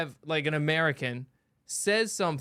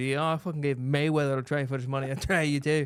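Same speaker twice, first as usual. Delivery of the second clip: put-on Irish accent. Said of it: "I heard a little Scottish in there, in that accent".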